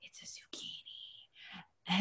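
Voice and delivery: very hushed, breathy whisper right up close. Retelling what he whispered during the visit: whispering. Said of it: "he whispered to me".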